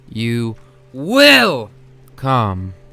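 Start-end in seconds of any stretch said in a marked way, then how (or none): 1.0-1.7 very high, shrieked, stretched-out stress on "will". Ordering him to come along: yelling the word WILL. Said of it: "She yelled out the word will".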